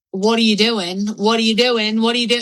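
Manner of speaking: toned-down scolding shriek, mock screaming. Retelling being woken in a closet by someone: imitating someone screaming. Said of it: "she started screaming at me".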